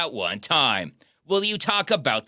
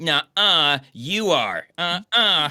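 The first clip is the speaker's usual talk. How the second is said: put-on loud, childish, taunting schoolyard-style voice. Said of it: "the most kindergarten".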